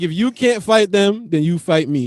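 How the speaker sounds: mock cool, unbothered, extremely calm, even delivery. Retelling a father's words to a crying child: imitating someone speaking extremely calmly. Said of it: "extremely calmly".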